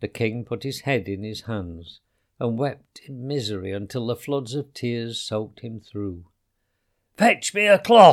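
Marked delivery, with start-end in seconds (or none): 7.2-8.1 loud, high-pitched commanding shout. The king, weeping in misery, calls for someone to help him; shouted. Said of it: "he shouted".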